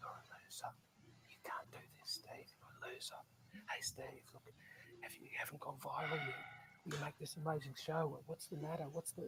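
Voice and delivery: hushed, sly, very quiet whisper with a doubtful tone. Acting out the inner voice of doubt: imitating a whispering inner voice. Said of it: "very whisper very quietly".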